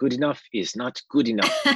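put-on German accent with a swooping tone. Quoting a saying of the Meister from an apprenticeship: imitating a German accent. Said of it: "in the German accent behind it".

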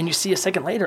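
plain reading voice

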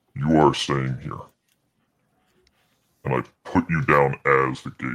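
electronically altered voice. Speaking a character's line and narrating, voice changer still on: voice changer effect. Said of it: "voice changer was still on".

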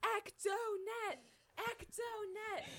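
mock very high-pitched shriek, screaming. Retelling a funny scene where two characters keep yelling, imitating Carlos screaming. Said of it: "Carlos just starts screaming".

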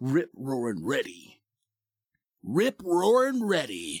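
slow, swooping, dramatic promo-style announcer voiceover. Doing a voiceover line for football season, in an announcer voiceover voice. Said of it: "That was my voiceover voice".

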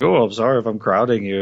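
put-on snarky voice. Retelling a character's line in a shared carriage: snarky Karloff line. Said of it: "all these snarky little remarks".

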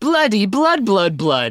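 loud motherly voice. Voicing the mother as the book fills with blood: louder than usual as the mother. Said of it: "Says her mother louder than usual".

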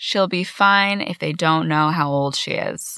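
usual speaking voice

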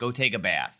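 ordinary talk

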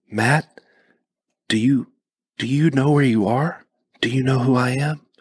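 tentative, cautious, careful. After the car crash, she asks the possibly injured narrator, very slowly, cautiously. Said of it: "very slowly said".

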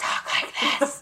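mock drunken loud whisper. Describing how a blackout-drunk person whispers secrets, imitating a drunk's loud whisper. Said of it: "And by whisper, I mean".

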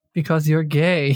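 put-on muttering under the breath. Retelling a remark made during an argument: imitating Nadia muttering under her breath. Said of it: "says under her breath".

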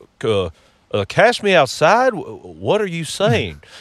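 slow, drawn-out, halting stammer with pitch swinging widely. Retelling a talk show exchange, doing a Doctor Phil impression. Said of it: "you can do a spot on Doctor Phil impression".

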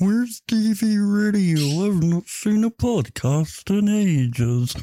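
very high, slow, drawn-out dopey dumb-guy voice. Podcast host imitating a listener who never subscribed, as a mockery of a dumbass. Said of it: "just a fucking mockery of a dumbass".

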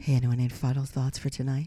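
low, sultry, seductive, sexy voice. Asking the group for final thoughts for tonight, in a sexy voice. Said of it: "I'll do my sexy voice".

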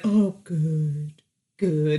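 low, creepy, terrible-sounding voice. Recapping a show scene, imitating the man's line: creepy, terrible voice. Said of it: "His creepy, terrible voice".

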